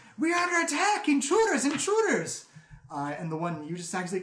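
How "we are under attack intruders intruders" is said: shrill, very high, full-volume, very loud yell. Voicing a guard who opens the door to raise the alarm: yelling guard raising alarm. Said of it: "And he yells".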